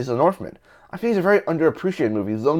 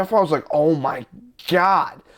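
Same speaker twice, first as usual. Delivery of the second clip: ordinary talk, nothing marked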